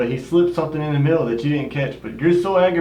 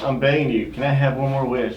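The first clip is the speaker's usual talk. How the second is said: plain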